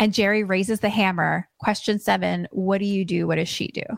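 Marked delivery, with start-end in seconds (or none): none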